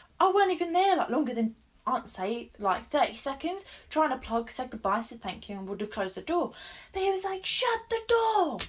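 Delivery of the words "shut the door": put-on clumsy, unconvincing Italian accent, pitched very high. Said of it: "I cannot do an Italian accent".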